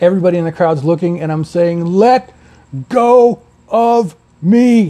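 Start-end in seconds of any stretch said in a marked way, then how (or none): 1.8-4.9 very slow, deliberate, spaced-out, loud, raised words. Retelling being grabbed in a watching crowd, imitating own slow, loud words. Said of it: "very slowly, very loudly".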